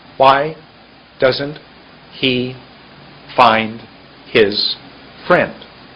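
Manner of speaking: slow, halting, word-by-word broken-up phrasing. Demonstrating for listeners what speaking more slowly sounds like, speaking slowly. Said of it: "I spoke slowly".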